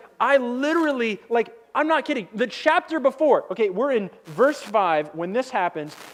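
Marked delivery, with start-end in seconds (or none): none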